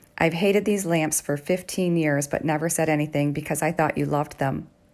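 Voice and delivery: ordinary talk, nothing marked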